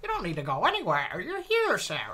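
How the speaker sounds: put-on high, swooping little old lady voice. Doing the voice the other speaker says you often do: little old lady from Labyrinth. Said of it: "you often do the little old lady from".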